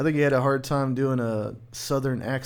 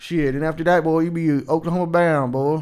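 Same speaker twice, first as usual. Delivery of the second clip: put-on country accent; 3 semitones higher, 6 dB louder than usual. Offering to be someone's voice coach, talking country. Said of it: "try to talk country".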